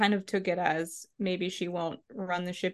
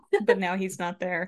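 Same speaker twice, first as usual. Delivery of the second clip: ordinary talk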